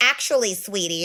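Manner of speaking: put-on condescending woman's tone. Speaker mimics how women argue with them, mocking condescending woman. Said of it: "they try to like get intellectual with you".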